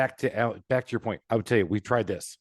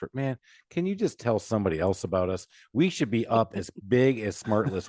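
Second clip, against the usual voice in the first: usual speaking voice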